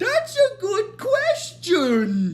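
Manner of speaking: slow, high-pitched drawl. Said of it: "And then Hermes is like".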